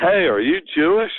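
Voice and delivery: sudden loud, high shout. On a phone call, the speaker re-enacts calling out a question: retelling a shout. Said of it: "So I shouted".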